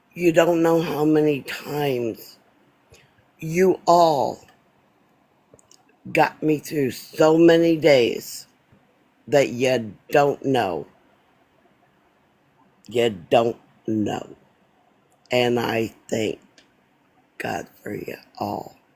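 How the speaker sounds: trying not to cry, holding back tears. Speaker thanking the audience, holding back tears. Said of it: "I'm going to say this without crying".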